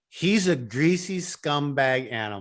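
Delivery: put-on slow, drawn-out Glaswegian accent. Quoting an actor's line from the show: imitating Tommy's Glasgow accent. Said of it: "the way Glasgow says it like that".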